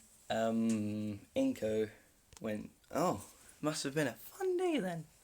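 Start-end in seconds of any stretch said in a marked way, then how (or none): 3.0-5.1 most feminine possible voice, high and sing-song. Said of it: "the most female, female voice I can".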